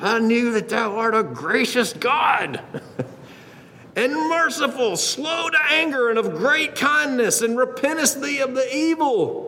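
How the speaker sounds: high, spoken through gritted teeth. Acting out a man's prayer to god, through clenched teeth. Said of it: "doing this with clenched teeth".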